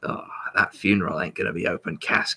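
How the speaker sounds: put-on muttering Australian bushman voice. Quoting a game character muttering to himself: muttering Australian accent as the Sniper. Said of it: "outback bushman Australian chap ... just muttering to himself".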